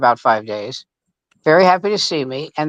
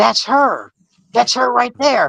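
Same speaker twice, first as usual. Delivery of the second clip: mock high, excited shouting; 7 semitones higher than usual. Retelling pointing out a woman in the room: imitating own past yelling. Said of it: "Stop yelling".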